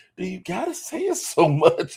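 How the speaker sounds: slow, high, sing-song, swooping, scandalized voice. Imitating the other speaker's mom scolding: imitating a pearl-clutching mom. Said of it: "'cause I can see your mama do this".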